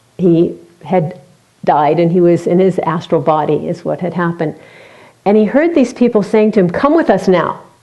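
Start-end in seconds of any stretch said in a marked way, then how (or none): 6.7-7.6 mock harsh, loud calling voice. Retelling a man's story of people calling him after he died, in a harsh voice. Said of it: "in a very harsh voice".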